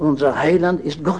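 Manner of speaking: stress on Heiland, lifted on a rising tune.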